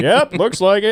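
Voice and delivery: chuckling, mocking reply. Retelling the tow driver's reply: imitating a mechanic laughing. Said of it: "he was just, like, laughing at me".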